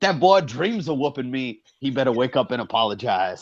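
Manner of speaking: bad, hammy put-on Southern accent. Speaker showing the other speaker how to trash talk, in a horrible Southern sixties impression.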